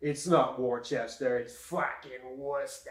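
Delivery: put-on full-on Boston accent. Imitating a hardcore Bostonian correcting how people say Worcester: imitating a hardcore Bostonian. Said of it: "hardcore Boston will be like".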